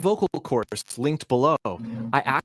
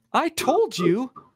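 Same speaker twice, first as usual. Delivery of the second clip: "told" hit on a very high note; 10 semitones higher than usual. Demonstrating intonation to listeners, the speaker says it with high pitch on 'told'. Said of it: "That told is really high".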